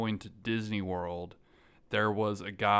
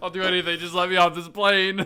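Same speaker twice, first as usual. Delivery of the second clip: fake crying, pleading tone, higher and louder; 9 semitones higher, 6 dB louder than usual. Acting out a passenger begging the flight attendant, mock sobbing.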